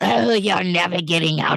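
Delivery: high, choked, squeezed-out throaty voice. Retelling a show scene where a guy approaches a captive, Smeagol-like choked voice. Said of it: "he comes in that voice and is like".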